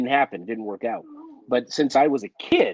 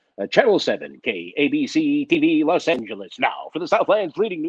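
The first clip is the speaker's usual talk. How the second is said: put-on local TV news station announcer voice; 3 semitones higher than usual. Recalling the local ABC announcer you spoke along with as a kid, imitating a TV news announcer. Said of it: "he'd be like".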